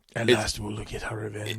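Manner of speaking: violent mock villain whisper. Imitating a movie villain's voice: Darth Maul violent whisper. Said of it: "his voice is like".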